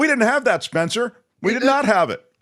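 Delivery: bitter, resentful, high yelling at full cry. Complaining to another speaker about having no Futurecast: yelling. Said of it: "Why are you yelling?".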